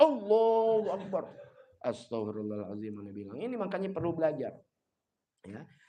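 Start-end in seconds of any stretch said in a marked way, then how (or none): 0.0-1.3 very loud, full-throated, booming shout. Showing a takbir too loud for easily startled people: very loud. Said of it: "Kenceng banget".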